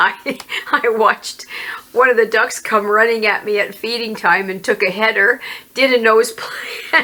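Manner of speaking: speech with held-in laughter breaking through. Speaker watching the animals stumble; trying not to laugh. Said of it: "Sorry, I'm not laughing".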